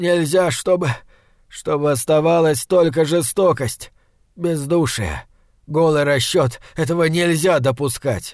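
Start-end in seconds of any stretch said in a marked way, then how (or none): none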